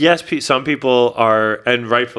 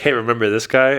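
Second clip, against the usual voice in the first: ordinary talk, nothing marked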